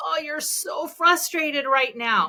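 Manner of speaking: amplified, animated, emotionally heightened, high and slow. Showing how to respond to someone's frustration without a robotic voice: amplified, animated delivery. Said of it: "do you hear the amplification even in my voice".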